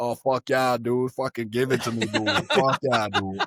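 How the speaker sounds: exclaimed Boston accent with casual dude talk. Imagining hooking up with a girl who has the Boston accent, in a Boston accent. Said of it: "she had the Boston accent".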